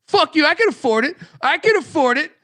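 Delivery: mock, very high, loud, shrill, cocky tough-guy bravado. Retelling how Patty C insisted on paying the bar tab, imitating his tough-guy bravado. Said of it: "he was like in tough guy mode".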